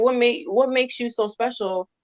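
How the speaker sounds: ordinary delivery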